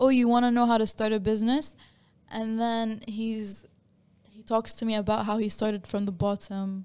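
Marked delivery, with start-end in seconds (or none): 0.0-1.7 loud, fast, extremely sarcastic and mocking. Retelling the company owner sitting down with them, imitating someone being sarcastic. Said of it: "starts acting extremely sarcastic".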